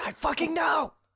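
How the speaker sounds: very high, loud, yelled stage whisper. Answering a companion across a crackling fire, in a yelled stage whisper. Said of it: "I yell over the crackling fire in a stage whisper".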